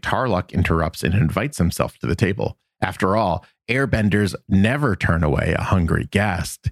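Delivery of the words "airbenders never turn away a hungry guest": normal talking voice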